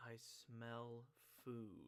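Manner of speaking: speaking very quietly. Signalling companions to stay quiet, a character speaks in a very quiet voice. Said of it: "say very quietly".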